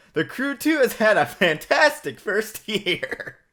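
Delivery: laughing while reading. Reading a game announcement aloud: laughing while reading. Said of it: "I still can't read it with a straight face".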